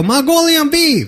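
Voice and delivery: very high-pitched cartoon character voice. Imitating the guy from South Park who goes: imitating the South Park guy. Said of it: "that's the guy go".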